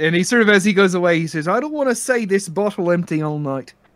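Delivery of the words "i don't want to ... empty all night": bad, put-on Irish accent. Voicing a departing tavern character's parting line: bad Irish accent. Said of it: "how bad my Irish accent is".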